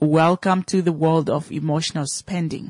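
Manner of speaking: plain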